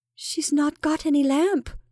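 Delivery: trembling, shaky voice. Narrator reads Rebecca's line to her sister; shaky voice. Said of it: "said Rebecca in a shaky voice".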